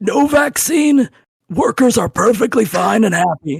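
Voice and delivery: acted strained, rasping voice. Answering a failed attempt by imitating RFK Junior. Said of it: "you nailed it".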